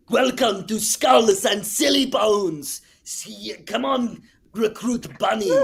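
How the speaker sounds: slow loud high-pitched cartoon voice. Demonstrating a line for a cartoon character, in Arnold the Pitbull voice. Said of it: "getting to do Arnold the Pitbull for Tiny Toons".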